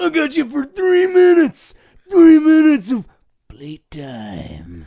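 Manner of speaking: high, booming wrestler bellow with big pitch swoops. Retelling a scene from the Spider-Man movie, imitating Macho Man Randy Savage. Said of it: "And he came out and he was like".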